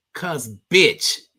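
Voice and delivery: woman's voice with a Houston accent.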